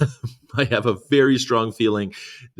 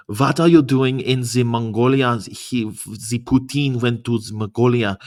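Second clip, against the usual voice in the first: put-on German accent. Mimicking how the question just sounded, as a german person: mock german accent. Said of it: "sounded like a German person asking her".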